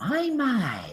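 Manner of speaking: woman's voice. A creature speaks in a startled, curious way to three men standing near it, in a female voice. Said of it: "a female voice".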